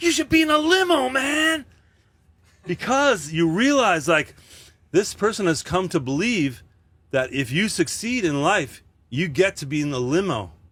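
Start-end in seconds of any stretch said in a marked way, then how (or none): 0.0-1.7 upset, very high-pitched voice. Retelling a kid on the subway reacting to seeing him: imitating an upset fan. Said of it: "you can tell they're upset".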